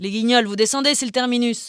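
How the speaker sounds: put-on loud, heavy Mexican accent laid on thick. Narrating a story, reading a voice by the van in a strong Mexican accent. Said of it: "Une voix au fort accent mexicain".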